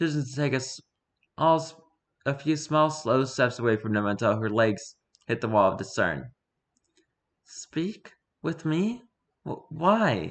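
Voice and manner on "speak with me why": put-on somewhat childish, higher and slower voice. Sally, backing away from the group, answers their wish to speak; somewhat childish tone. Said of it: "Sally asked in a somewhat childish tone and voice".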